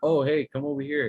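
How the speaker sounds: beckoning, calling out across a distance. Acting out something luring campers while sounding like their counselor: imitating a camp counselor calling. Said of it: "they sound like the camp counselor".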